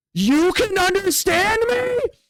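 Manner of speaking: very high, startled, freaked-out orc cry. In a game, an orc hears a telepathic message and starts freaking out. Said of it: "the orc's gonna freak out and go".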